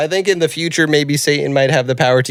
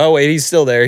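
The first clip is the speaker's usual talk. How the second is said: usual speaking voice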